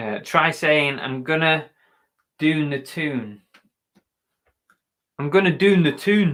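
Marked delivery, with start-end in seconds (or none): 1.0-6.3 rough attempt at a put-on Scottish accent. Trying out a voice on a short phrase, put-on Scottish-sounding accent. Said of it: "Is that Scottish, isn't it?".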